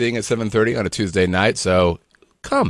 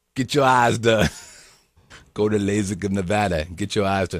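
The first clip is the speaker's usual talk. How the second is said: put-on Italian mafioso voice drifting toward East LA accent; 3 semitones lower, 4 dB quieter than usual. Quoting what a man from a video would say, attempted Italian mafioso voice. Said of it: "radical Italian mafioso kind of guy".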